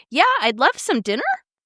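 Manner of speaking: pitch lifting upward on dinner. Acting out her habit of going up at every sentence end: rising pitch at sentence end. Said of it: "I would go up in my tone at the end of every sentence".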